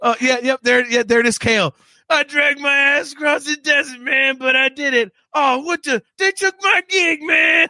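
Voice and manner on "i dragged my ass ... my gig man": goofy put-on jazz-singer voice, pitched up high. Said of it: "It's that stupid voice".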